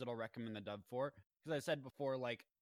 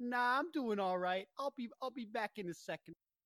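put-on 1920s Chicago gangster accent, higher pitch; 9 semitones higher than usual. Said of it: "he just throws a Chicago accent on it".

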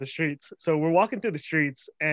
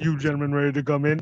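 put-on very deep voice; 3 dB louder than usual. Retelling what a man said to the speaker's group, imitating his deepest voice. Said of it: "He was like".

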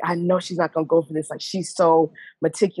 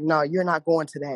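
put-on aggressive, berating tone. Retelling how a parent refused a sleepover: imitating mom's aggressive tone. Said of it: "you're saying it in an aggressive tone".

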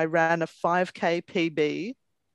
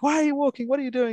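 mock coach voice, mild yell, pitched up; 8 semitones higher than usual. Retelling how the coach on his bike yelled at them, acting out the yelling. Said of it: "sort of yelling at me like".

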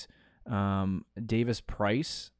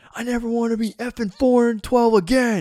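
put-on screaming, much higher pitch; 12 semitones higher, 9 dB louder than usual. Describing a team huddle, the speaker retells Jamal Williams screaming at everyone. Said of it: "he's like screaming at everyone".

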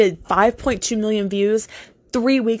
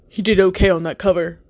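put-on dude voice. Retelling what a man messaged about a cover, imitating that guy's voice. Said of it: "I just had to do it in, like, that guy voice".

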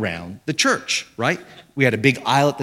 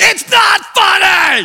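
shrill, very high, very loud yelling; 9 dB louder than usual. Retelling how the son reacted to laughing people: imitating son yelling. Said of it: "He starts yelling".

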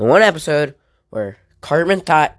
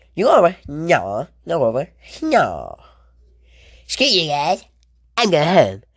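cartoon-kid voice with swooping, swinging pitch; 2 semitones higher than usual. Recalling people at a microphone who all sounded alike: Cartman impression. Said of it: "it was nothing but Cartman voices".

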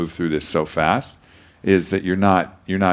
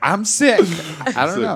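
put-on very high, light voice, laughing; 14 semitones higher than usual. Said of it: "with a laugh".

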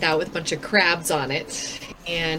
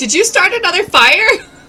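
shrill, very loud, high yell; 13 semitones higher, 10 dB louder than usual. Voicing a character yelling back a reply: yelling back in character. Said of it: "I'm gonna yell back".

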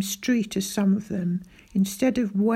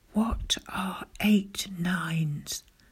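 faint, hushed, very soft whisper; 3 semitones lower, 6 dB quieter than usual. He covers his mouth with his hand and asks the narrator, whispering very softly. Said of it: "whispered very softly to me".

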